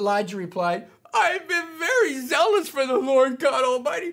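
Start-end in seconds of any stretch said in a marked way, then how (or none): 1.1-4.1 very high-pitched self-pitying whine, put on. Retelling Elijah's reply in the story, in a whiny Elijah voice. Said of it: "here's how I imagine Elijah whiny, with his whiny voice".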